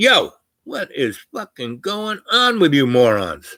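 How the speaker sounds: loud shout in an outside voice. Speaker retelling how he yelled at an armed crowd about to shoot, retelling a loud shout. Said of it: "I used my outside voice and said".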